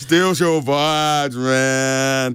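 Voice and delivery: mellow, easygoing, laid-back, drawn-out hippie man voice. Radio host talking about things that steal your vibes, in a hippie voice. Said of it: "I don't want to sound like a hippie, but I'm going to".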